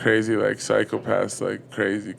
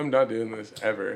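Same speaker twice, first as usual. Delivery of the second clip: ordinary talk, nothing marked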